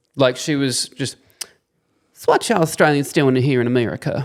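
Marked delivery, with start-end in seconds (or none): 2.1-4.3 mock elderly Southern woman accent. Retelling what an old lady on a bus said: imitating an old southern lady's accent. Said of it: "the greatest accent in the world".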